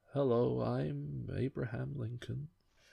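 gently hushed, very soft, slow, soft-spoken. Contrasting cartoon Lincolns with Daniel Day-Lewis's take: soft-spoken Daniel Day-Lewis Lincoln. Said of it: "with a really soft-spoken way of talking".

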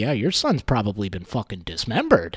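grave, very low, utterly earnest delivery. Retelling what he told these people, mock dead serious. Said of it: "they're like dead serious".

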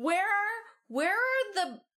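put-on high, slow, outraged indignant girl voice. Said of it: "The girl gets real indignant".

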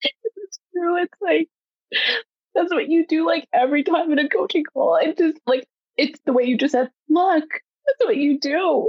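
tearful, crying. Reacting to the other speaker describing their work: emotional, crying.

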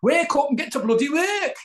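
put-on very high, loud northern English accent. Recalling a man who woke him every morning, quoting him in a Northern accent. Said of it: "he had a Northern Ming accent".

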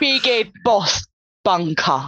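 put-on orc character voice. Presenting a tabletop terrain piece, saying its name in an Orc voice. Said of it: "You've got this Orc voice down".

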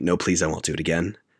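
ordinary talk

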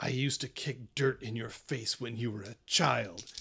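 menacing growl through the words. Voicing an enemy fighter who turns to a player mid-fight: growling. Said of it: "just kinda growls out at you and says".

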